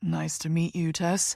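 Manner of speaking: deep, confident, self-assured voice. Reading a character's greeting on first meeting: deep confident voice. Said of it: "he says in that deep voice".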